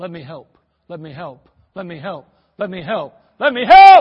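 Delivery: loud, booming, imploring plea with swooping pitch. Preaching about prayerlessness, voicing God in heaven: God begging. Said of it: "Here's God in heaven begging us".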